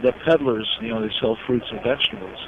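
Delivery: ordinary talk, nothing marked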